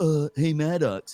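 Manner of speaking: dim, thick-headed, dopey dumb guy voice. Retelling a bit done in a dumb guy voice: Maddox dumb guy voice. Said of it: "dumb guy voice where he's like".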